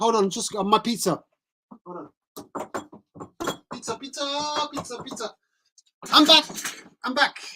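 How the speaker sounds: chatty streamer voice. On stream, speaker performs a bit for viewers, imitating Shambini. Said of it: "That's my impression of Shambini".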